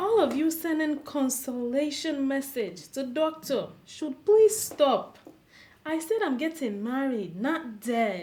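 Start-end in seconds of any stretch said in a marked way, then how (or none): none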